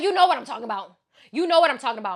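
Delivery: play-acted, heated, insistent yelling, repeated. Retelling an argument with Chuchis, retelling own yelling in an argument. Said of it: "Him and I just kept yelling and arguing".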